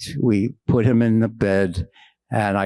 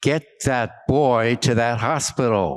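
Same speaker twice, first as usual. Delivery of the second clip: put-on very angry voice. Speaker recounts a voice heard behind him while driving, retelling a very angry voice. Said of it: "in a very angry tone".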